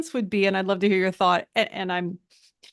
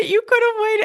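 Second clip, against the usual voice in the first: high, loud exasperated voice. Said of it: "I was just like".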